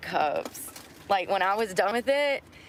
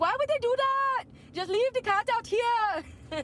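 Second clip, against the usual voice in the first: put-on very high-pitched, poorly done Irish accent. Quoting a woman in a story, in a bad Irish accent. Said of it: "I'm horrible at an English act or a Irish accent".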